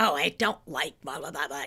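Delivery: very low, raspy, irritated voice. Describing a lady from their classes, the speaker imitates her angry raspy voice. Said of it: "you could hear that anger and that rasp in her voice".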